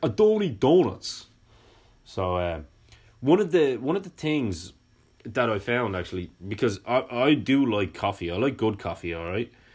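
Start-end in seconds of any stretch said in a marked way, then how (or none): 0.0-1.3 put-on New York accent, much higher pitch. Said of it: "in my best New York impression".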